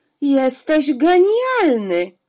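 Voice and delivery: loud, exclaiming outburst. Hearing what a tear expresses, the angel responds to its maker, exclaiming. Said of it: "zawołał anioł".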